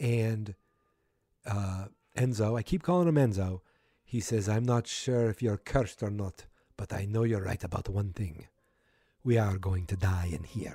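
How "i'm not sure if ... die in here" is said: put-on speech in a Russian accent. Recapping a scene, quoting Enzo's line in a Russian accent. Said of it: "my Russian accent is perfect".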